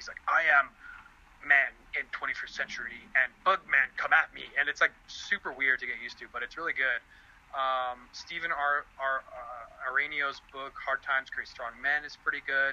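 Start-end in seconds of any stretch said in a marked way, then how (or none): 0.3-4.5 put-on caveman voice. Quoting a book's author who writes like a caveman: caveman talk. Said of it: "He writes like a caveman".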